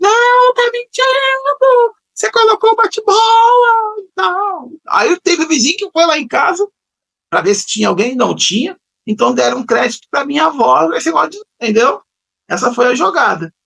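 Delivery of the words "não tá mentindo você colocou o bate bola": play-acted, very high, drawn-out, accusing child's shout. Retelling shouting at the grandmother as a child: imitating a child shouting. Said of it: "E eu grito".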